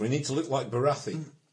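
put-on Scottish accent throughout. Giving orders in character about raising the sails: Scottish accent. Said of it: "I say with a Scottish accent".

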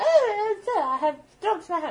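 fake French accent, very high, loud and slow. Voicing a character who drops a handkerchief: put-on French accent. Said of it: "in a French accent".

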